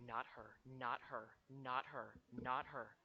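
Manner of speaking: hushed, low, soft half-whisper under the breath, repeated. A player's character speaks to the guy, in a half-whisper. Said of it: "whisper to the guy, and I go".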